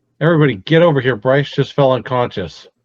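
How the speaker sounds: loud yelling, called out to carry. Playing a character in a tabletop game, yelling for the group to come over. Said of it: "and I'm gonna yell".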